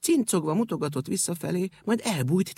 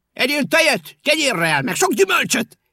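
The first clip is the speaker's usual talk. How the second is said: shrill, very loud, high calling-out shout; 10 semitones higher, 9 dB louder than usual. Narrator reading the brave ink-rabbit calling after the departing cat, shouting after someone. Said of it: "Kiáltotta utána".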